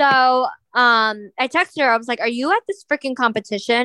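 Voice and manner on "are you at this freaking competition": usual speaking voice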